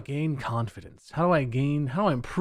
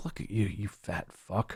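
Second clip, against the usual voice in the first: put-on mocking, contemptuous, scornful tone; 6 semitones lower, 7 dB quieter than usual. Retelling talking to himself in the mirror: imitating self-mockery. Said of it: "mocking myself".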